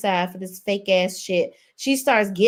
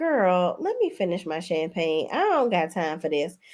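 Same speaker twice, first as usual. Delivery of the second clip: calm, cool delivery, quieter; 2 semitones lower, 5 dB quieter than usual. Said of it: "Stacy is just so cool, calm".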